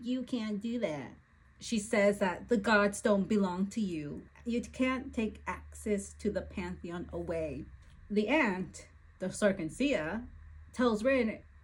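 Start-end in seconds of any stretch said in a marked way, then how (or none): 0.0-1.1 mock spoiled, petulant, bratty small voice. Summarizing a book scene where Rin protests: Rin's bratty little voice. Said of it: "a bratty little voice saying".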